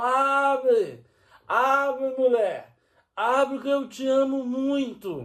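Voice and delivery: play-acted slow, dragging drunk voice, "abre" stretched. Retelling a drunk man shouting at his wife to open up, imitating his shouting. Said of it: "E ele gritando".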